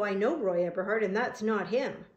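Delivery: plain reading voice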